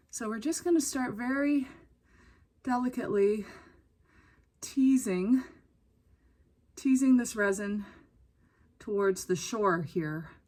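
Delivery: puffing and breathing heavily through every phrase. Narrating while working with resin: out of breath. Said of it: "I sound like I'm running a marathon".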